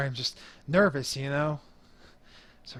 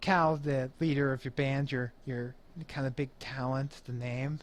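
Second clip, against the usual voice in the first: normal talking voice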